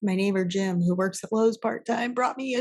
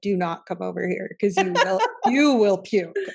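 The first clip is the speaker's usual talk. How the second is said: ordinary talk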